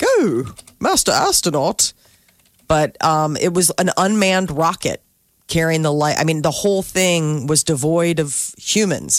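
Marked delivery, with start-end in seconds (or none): 0.0-1.9 high, swooping, fussy, prissy robot voice. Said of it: "this C three P O voice".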